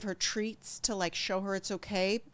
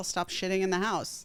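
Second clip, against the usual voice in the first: normal talking voice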